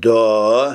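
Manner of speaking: drawn-out surprised yes. Reading Tony's reply, drawled in surprise. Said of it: "протянул удивленный Тони".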